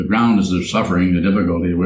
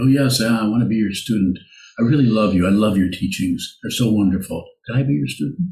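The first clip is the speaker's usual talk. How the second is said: mocking, silly, sarcastic, fawning gush; 3 semitones higher than usual. Imitating an eager would-be student begging to study: mocking imitation of gushing student. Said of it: "silly and sarcastic about it".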